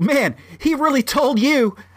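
put-on exaggerated sarcasm, very high pitched. Retelling a joke told to a man who seemed down, retelling over-the-top sarcasm. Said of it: "I was trying to be like over the top sarcastic".

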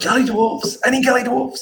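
very high, showy, theatrical stage whisper. A tabletop player's character calls out for gully dwarves, in a stage whisper. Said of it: "I'm saying in a sort of stage whisper".

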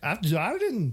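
attempted Swedish accent coming out Irish. Trying to pronounce a Swedish product name: bad attempted Swedish accent. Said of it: "That's Irish".

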